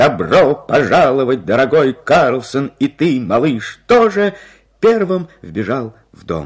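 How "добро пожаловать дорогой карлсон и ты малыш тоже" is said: shouting, crying out, louder. Narrator reads Karlsson flinging open his door: shouting. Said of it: "с криком".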